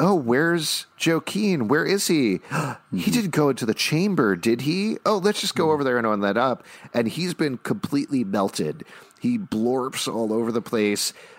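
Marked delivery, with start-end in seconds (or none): 0.0-6.6 teasing, mocking taunt, pitched up. Recapping a scene where a woman taunts others after a man vomits: retelling a mocking taunt. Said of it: "Lady True very mockingly is like".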